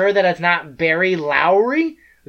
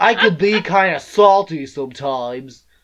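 deliberately bad sketch-comedy character voice. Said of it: "worst S N L skit".

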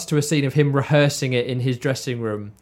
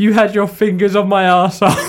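words breaking up with laughter throughout; 6 semitones higher, 5 dB louder than usual. Speaker reading a quoted film line aloud off paper, laughing through tears. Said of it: "I'm in tears now just reading it".

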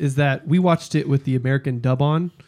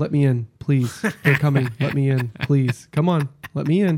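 mock deadpan, flat, unemotional, dubbed-sounding delivery. Retelling how the American dub delivered a pleading scene: imitating a flat dubbed plea. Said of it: "Loses a little bit of that emotional impact".

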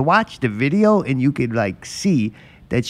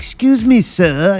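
high, fake British accent, calling out; 6 semitones higher, 4 dB louder than usual. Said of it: "in like a British accent".

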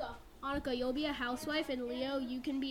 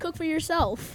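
very loud, fake southern country accent; 3 semitones higher, 9 dB louder than usual. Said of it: "he has a country accent".

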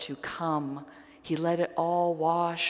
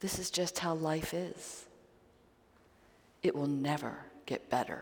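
soft, whispered murmur; 7 dB quieter than usual. Voicing the tempter in a talk on temptation, whispering. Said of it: "a voice whispers".

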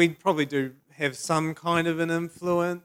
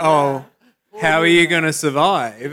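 laying pity on thick, raised, very pitying tone; 8 dB louder than usual. Retelling how a young lawyer reacted to their job: mock-pitying tone. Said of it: "like a really pitying tone".

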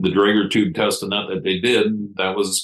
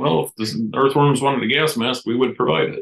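put-on sarcasm, higher pitch; 5 semitones higher than usual. Retelling their own reply when asked about a sign-up sheet, sarcastic. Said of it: "the sarcastic side of me comes out".

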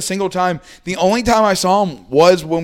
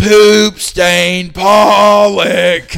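mock screaming, louder; 3 semitones higher, 7 dB louder than usual. Recounting a fan heckling an outfielder, retelling a screamed heckle.

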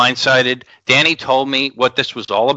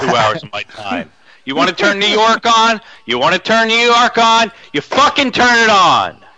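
fed-up, rising, heated anger; 9 semitones higher than usual. Complaining about wasting two hours of time: getting angry. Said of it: "I'm getting a little fucking pissed off right now".

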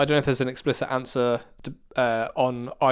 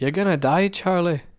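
put-on poorly done Scottish accent, pitched up; 6 semitones higher, 3 dB louder than usual. Recapping a TV scene, quoting what Desmond tells Charlie, bad Scottish Desmond impression. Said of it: "That was a terrible Scottish accent".

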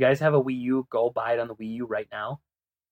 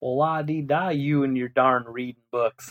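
exaggerated put-on uneducated-sounding southern hillbilly voice. Teasing themself right after bragging about reading, in a mock southern hillbilly voice. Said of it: "my southern hillbilly, uneducated".

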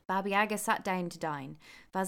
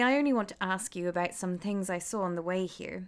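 plain reading voice

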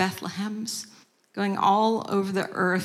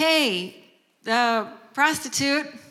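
put-on light, mild, pitched-up calling voice; 6 semitones higher than usual. Retelling calling out to a woman across the street: retelling a yell across the street. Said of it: "I just yelled out across the street".

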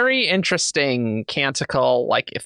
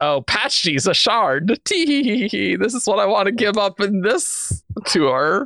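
put-on coy teasing voice, higher; 8 semitones higher than usual. Retelling how an author teased a future reveal: imitating Brandon being coy. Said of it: "He was so coy".

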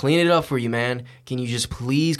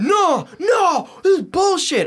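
play-acted very high, very slow, drawn-out screaming; 5 dB louder than usual. Retelling a quarrel in a car, imitating the other person screaming. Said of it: "He's screaming at the top of his lungs".

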